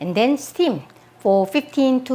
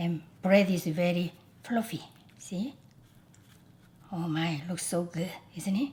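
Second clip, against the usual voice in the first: soft, hushed, very quiet half-whisper; 5 semitones lower, 14 dB quieter than usual. Showing a freshly baked bun up close: half-whispering. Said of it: "Why am I whispering to you?".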